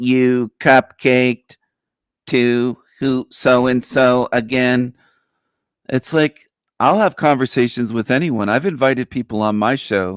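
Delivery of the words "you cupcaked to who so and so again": very slow, flat, level sixties-style robot monotone. Joking about online judgment, repeating an accusation: Dalek robot voice. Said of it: "in that nineteen sixties robot voice".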